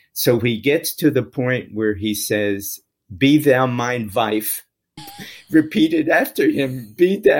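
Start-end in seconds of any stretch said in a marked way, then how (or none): 3.1-4.6 imitated, put-on European accent. Retelling how the rabbi led the ritual vows, in his European accent. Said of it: "this rabbi had a European accent".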